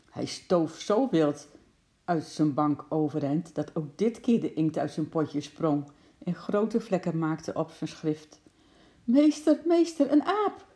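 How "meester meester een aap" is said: shrill, very high-pitched, loud shouting cry. Narrator reading a pupil's cry to the teacher, pointing at the window, shouting. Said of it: "Schreeuwde hij".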